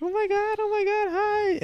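very high, slow, drawn-out fake-friendly tone. Imitating girls greeting someone they dislike: imitating a high-pitched fake-friendly voice. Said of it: "you do the high-pitched voice".

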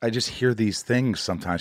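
ordinary talk

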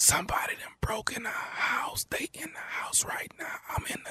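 frightened, breathy, barely audible whisper. On the phone while intruders are in the house, whispering. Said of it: "I barely can hear".

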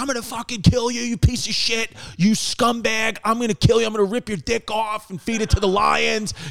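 mock raging, threatening, high-pitched screaming tirade. Retelling how Napoleon screamed at his minister: imitating Napoleon screaming.

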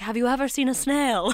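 faux British accent, played straight. Retelling a scene where he asks her to crawl, in a british accent. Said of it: "my British accent's too good".

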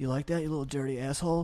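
spoken close to the ear. Explaining what people say close to someone's ear, the speaker demonstrates, said close to someone's ear. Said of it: "you're near someone's ear that close".

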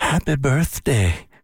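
put-on British English accent. Retelling what she said to his wife at a book signing, British accent. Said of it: "Is that your British accent?".

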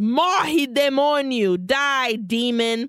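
high-pitched screaming. Retelling a movie scene where a robber screams at a demon: retelling a scream. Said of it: "and he screams".

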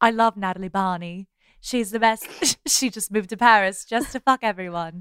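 faux, put-on British accent. Talking about Natalie Barney in a put-on British accent. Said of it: "That's my British accent".

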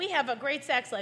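ordinary talk

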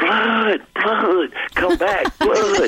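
very high, rising, drawn-out scream. Retelling running down after a fall with an arm held up, retelling screaming. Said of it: "I'm screaming".

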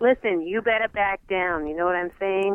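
mediocre put-on Boston accent. Answering after Brockman's area of the world comes up, in a put-on Boston accent. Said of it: "I wish I had a better Boston accent".

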